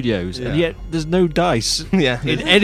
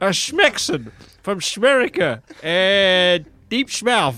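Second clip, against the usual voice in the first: put-on Texan accent, higher pitch; 4 semitones higher than usual. A player answers another character's question in-game, in Frank Peaches' Texan accent. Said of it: "I'm a Texan".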